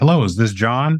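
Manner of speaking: plain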